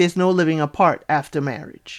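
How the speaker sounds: ordinary talk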